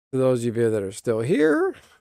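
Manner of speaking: voice cracking and breaking mid-line. Closing a video, the speaker addresses viewers still watching, voice cracking. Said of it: "my voice just cracked".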